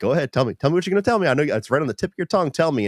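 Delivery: very high, taunting, goading villain voice. Retelling a movie scene where Lex Luthor taunts Lois Lane: imitating Kevin Spacey's Lex Luthor. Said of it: "And he's like".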